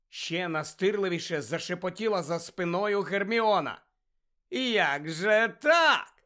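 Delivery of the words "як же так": malicious, sinister gloating glee. Malfoy asking Harry a question; sinister glee. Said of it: "З лиховісною втіхою запитав Мелфой".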